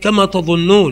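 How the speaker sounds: ordinary talk, nothing marked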